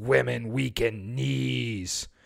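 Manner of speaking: put-on raspy, soft, rough Philadelphia accent. Quoting Rocky's coach in the original movie, in a raspy Philadelphia Mickey voice. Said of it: "really raspy, totally Philadelphia voice says".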